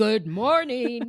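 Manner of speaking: full, big, robust voice. Speaker recounts her husband's morning greeting as he comes downstairs; big, robust voice. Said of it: "in a like a really big, robust voice".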